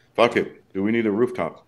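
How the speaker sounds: normal talking voice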